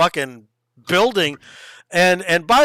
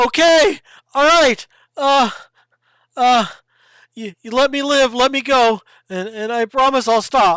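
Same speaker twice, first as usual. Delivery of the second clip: high, frightened, stammering, begging voice tripping over words; 6 semitones higher than usual. Voicing a scared character bargaining for his life: scared, stammering plea. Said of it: "he says".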